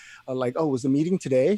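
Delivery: mock-sarcastic tone. Quoting one of the little remarks the speaker enjoyed: mock-sarcastic remark. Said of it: "those little sarcastic remarks like".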